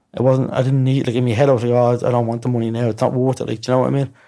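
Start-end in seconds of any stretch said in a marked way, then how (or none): none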